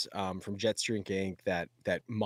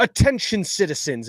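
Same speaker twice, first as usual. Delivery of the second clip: put-on English accent, projected very loud and high; 10 semitones higher, 11 dB louder than usual. Recalling professional actors reading a script's first line: imitating Sadie's English accent. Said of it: "is it okay if I do like an English accent?".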